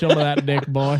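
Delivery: put-on old southern man voice with southern accent. Imagining what the judge in the case said, old Southern man voice. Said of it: "I want this judge to be like an old Southern man".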